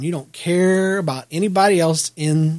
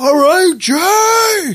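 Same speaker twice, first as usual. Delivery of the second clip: very high, loud, drawn-out hollering yell; 13 semitones higher, 8 dB louder than usual. Recalling the moment the speaker's son walked up on stage, retelling a loud yell. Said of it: "And I yelled it loud".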